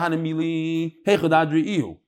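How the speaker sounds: ordinary delivery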